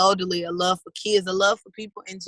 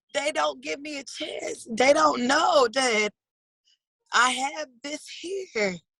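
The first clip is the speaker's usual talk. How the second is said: high voice with tears coming through. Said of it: "it makes me cry".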